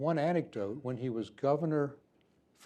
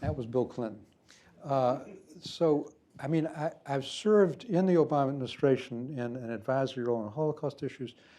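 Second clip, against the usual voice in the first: usual speaking voice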